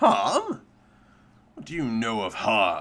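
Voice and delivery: angry, hot-tempered creature voice, low and swooping. In a role-play, the speaker voices a creature replying hotly to another player's character. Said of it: "The creature replies hotly".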